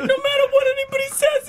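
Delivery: loud, bawling crying. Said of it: "cry bawling".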